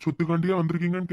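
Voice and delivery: ordinary delivery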